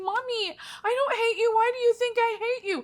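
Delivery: mock, very high, tearful, sobbing little-kid voice. Retelling what the crying daughter said back: imitating a crying child. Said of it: "broke down and started crying and saying".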